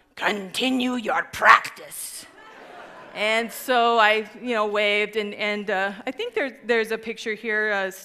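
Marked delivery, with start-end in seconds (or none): 0.2-2.3 acted-out, put-on growled voice. Retelling what a man said after bending down to the speaker, retelling a growl. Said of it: "he bent down and he growled".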